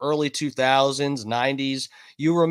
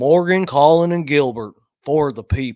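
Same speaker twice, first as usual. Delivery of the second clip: easygoing, charming delivery with voice raised; 5 dB louder than usual. Recalling a man's commercials, the speaker does a John Morgan Southern charm voice. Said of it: "with his little Southern charm voice".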